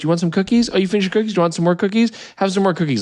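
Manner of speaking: doting, motherly voice. Retelling how the airline's attendants offered snacks: imitating a nice flight attendant. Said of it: "they would come by and be like".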